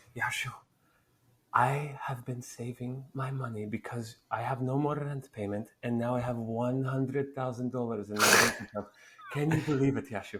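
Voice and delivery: put-on heavy, very strong Polish accent. Act out your immigrant mother talking to you at a wedding, in a very strong Polish accent. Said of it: "she has a very strong Polish accent".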